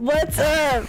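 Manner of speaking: screaming loudly into the mic. Greeting the audience at the start of a live recording: loud, screaming into the mic. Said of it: "I'm screaming".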